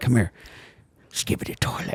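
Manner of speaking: soft put-on old man voice. Predicting what Grandpa will say on the upcoming visit, imitating Grandpa. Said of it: "And he's gonna be like".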